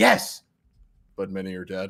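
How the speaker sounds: awkward, unintentionally funny, very low, badly delivered. Retelling a movie scene, mocking a survivor's bad line delivery. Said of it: "I loved her delivery 'cause it was so unintentionally hilarious".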